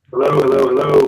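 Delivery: very deep, low, rough, machine-like robotic voice. Saying hellos while others judge how it sounds, robotic voice. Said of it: "It's pretty roboty".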